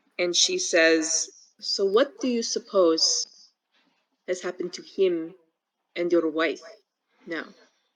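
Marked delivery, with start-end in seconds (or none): 1.6-7.5 lowered, subdued, quiet voice. Voicing a character who speaks up after a pause: lower, quieter voice. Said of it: "her voice is lower, um, not soft, but quieter".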